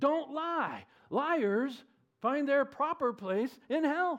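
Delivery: high, slow, stern tone. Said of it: "This is why we tell children".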